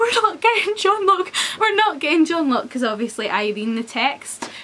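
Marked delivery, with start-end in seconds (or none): 0.0-2.7 play-acted, pitched-up mild yell. Retelling watching an episode, imitating own screaming at the tv. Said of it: "screaming at the T V going".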